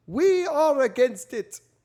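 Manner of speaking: bad over-the-top British accent, very high and loud. Quoting a British official's reply to the press, horrible fake British accent. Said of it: "That was a horrible British accent".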